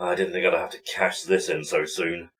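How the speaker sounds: a quiet mutter, muttered to oneself. A player's character speaks before stepping forward to hand over a token, muttered under breath. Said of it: "mutter under his breath".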